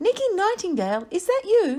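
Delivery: small, tiny, high little worm voice. Narrator reading a worm's line as it speaks up, in a tiny voice. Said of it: "spoke up in a tiny voice".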